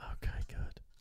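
soft, unvoiced, breathy whisper. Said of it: "you were whispering".

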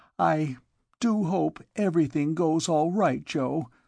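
unsteady voice. Sally speaks to Joe after the major marches away, unsteady voice. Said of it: "she said unsteadily".

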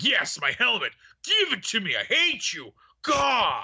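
petulant, bratty, high, whiny villain tantrum voice. Guessing how Kylo Ren will walk in and demand his helmet, as a Kylo Ren impression. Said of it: "That's my impression of Kylo Ren".

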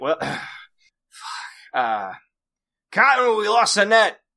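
high, loud, exasperated voice, called out.

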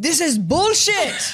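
Slovenian accent, played up and exaggerated. Worried about getting in trouble, the speaker tries imitating Luca's Slovenian accent. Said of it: "Is that how Slovenians sound?".

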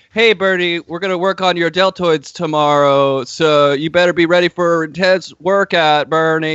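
acted, wooden, stiff delivery, like reading a script. Retelling an actor reading lines off a script: imitating stiff script reading. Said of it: "he's clearly reading the lines off of the script".

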